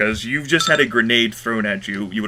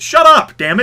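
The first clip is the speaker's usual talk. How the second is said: shrill, very high, very loud full-volume yell; 10 dB louder than usual. Cutting off players talking out of turn in a game: yelling. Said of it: "I do apologize for yelling".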